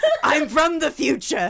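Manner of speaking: put-on old-sounding voice, slow and loud.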